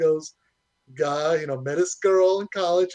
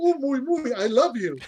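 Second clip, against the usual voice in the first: put-on goofy alien creature voice, higher pitched; 8 semitones higher than usual. Retelling how a girlfriend talks while cuddling: Jar Jar Binks voice. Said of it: "speaking like Jar Jar Binks".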